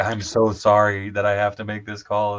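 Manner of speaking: imitated tearful sobbing. Retelling a call from the HR lady, imitating someone bawling. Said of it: "she just called me up and she is bawling".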